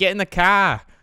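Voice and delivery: put-on r-dropping Boston accent. Discussing regional accents, demonstrating a Boston accent. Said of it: "Boston's like".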